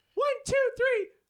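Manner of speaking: squeaky, silly put-on voice, very high. Retelling how friends pushed him to do the bit, he counts off in a high-pitched voice. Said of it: "I did it with the high, voice".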